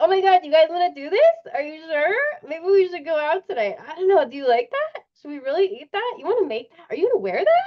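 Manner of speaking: thin, tinny, high, anxious, nervous fretting chatter. Speaker shows listeners how their voice sounds when anxious: tinny, high anxious voice. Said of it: "It's so tinny and high".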